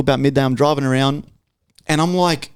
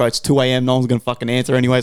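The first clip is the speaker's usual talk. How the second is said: usual speaking voice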